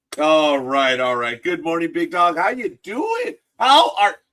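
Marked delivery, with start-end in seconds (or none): 1.4-4.1 very high, attempted, put-on New York accent. Speaker greets a companion called big dog, attempting a New York accent. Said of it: "I cannot do the New York accent with you".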